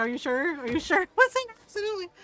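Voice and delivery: loud, nervous, frightened tone with pitch climbing up. Retelling what a frightened man kept asking him, imitating a scared man. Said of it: "Now he's all scared of me".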